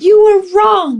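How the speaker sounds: put-on very high, shrill, loud child's yell. Retelling how a young son burst through the front door: imitating a child yelling. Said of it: "he's yelling for me".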